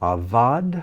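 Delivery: Avad with stress on the last syllable -vad. Going through a line of practice words, stress on last syllable vad. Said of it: "I put the accent on the last syllable".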